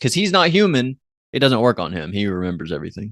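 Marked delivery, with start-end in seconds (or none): none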